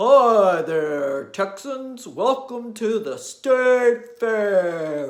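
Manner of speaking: booming, sonorous voice with drawn-out delivery. Telling a story, Big Tex greets the Texans at the State Fair, big sonorous voice. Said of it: "in his big sonorous voice".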